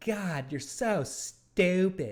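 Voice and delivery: put-on slow, deliberate old grandmother voice. Recall how a best friend made everyone laugh as a kid, with an impression of a friend's grandmother. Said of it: "he would start talking like her".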